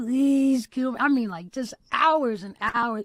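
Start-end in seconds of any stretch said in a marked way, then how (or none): 0.0-1.0 mock desperate begging, at wits' end. Retelling a prayer from a day of crying: retelling a desperate plea. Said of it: "I was like".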